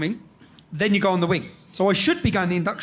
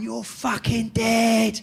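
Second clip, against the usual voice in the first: menacing, shouted, threatening voice; 4 semitones higher than usual. Retelling what everyone was shouting at the speaker: retelling a shouted threat. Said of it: "And they're all shouting".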